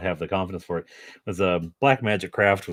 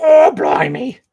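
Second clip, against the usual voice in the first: shrill, high, loud British accent, blurted out; 12 dB louder than usual. Guessing at how someone's wife sounds, in a Monty Python-style British accent. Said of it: "all British people sound like Monty Python".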